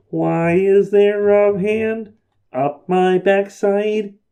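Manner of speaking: stretched out slow and high. Correcting the other speaker's joke line, in a Kermit the Frog voice. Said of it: "He doesn't say that".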